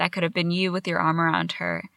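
ordinary talk, nothing marked

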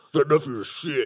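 imitated masculine voice. Showing how Brian really sounds after a bad attempt, imitating Brian's manly voice. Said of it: "Brian's very manly".

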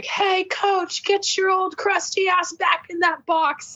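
acted, high, rude yelling. Retelling a fan heckling the coach at a game: imitating a fan yelling. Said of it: "this guy yelled at her".

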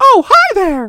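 very high, very loud, squeaky cartoon voice. Trying out a character voice that comes out as Mickey Mouse voice. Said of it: "That's the wrong voice. That's Mickey Mouse".

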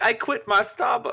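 attempted upper-class accent slipping into Southern accent. Imagining a queen saying a line: imitating the Queen of England. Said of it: "imagining the Queen of England being like".

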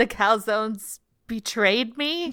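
slow, dramatic, drawn-out, wounded-sounding impression voice.

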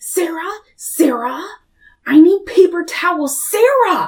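mock nasty, very high, very slow, drawn-out shrieking. Retelling how she screamed at Sarah instead of getting up herself, re-enacting a nasty scream. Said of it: "she was literally screaming".

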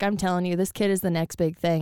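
ordinary delivery

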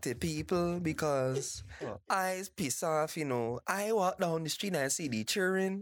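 Barbadian island accent. Speaker mimics how Bajans talk: Bajan accent. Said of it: "Bajans talk like that".

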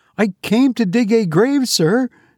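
stuttering, very high. A man answering the goblin's question in the churchyard at night, stammering. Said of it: "stammered Gabriel".

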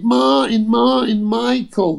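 high, loud shouted call. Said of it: "she shouted".

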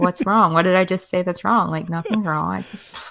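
ordinary talk

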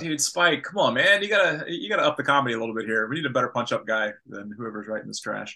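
normal talking voice

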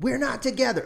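acted, piercing, very high-pitched shrill shouted scream. Comedian retelling a front-row man and woman shouting from the crowd, retelling a scream. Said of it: "they've screamed out".

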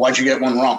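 utterly serious, dead serious, no humour. Retelling a father's reaction to a test score: imitating dad's dead serious question. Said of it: "and dead seriously".

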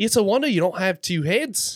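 put-on Australian accent. Retelling a friend's remark at another speaker's request: Australian accent. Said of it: "give us the Aussie accent".

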